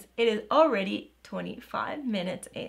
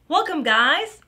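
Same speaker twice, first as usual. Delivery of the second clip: over-energetic, way too hyped, loud, high voice; 7 semitones higher, 6 dB louder than usual. Restarting a video intro after a mistake: too energetic. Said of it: "I am too energetic today".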